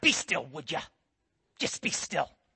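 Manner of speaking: stern, angry, breathy whisper. Describing how scripture sounds when they read it, mock-angry scripture voice. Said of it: "we hear this angry voice behind it".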